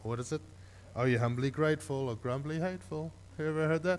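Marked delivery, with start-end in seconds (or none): none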